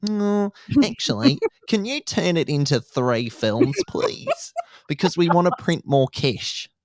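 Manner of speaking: put-on very high, loud, swooping New Zealand accent. Retelling the studio asking for three films instead of two: kiwi accent impression. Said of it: "you've just sent me doing that Kiwi accent".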